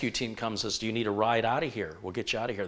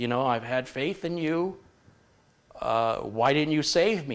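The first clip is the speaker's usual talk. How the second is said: put-on upset man voice, higher; 4 semitones higher, 4 dB louder than usual. Telling a joke, voicing the drowned man meeting god: imitating an upset man. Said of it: "and he's upset".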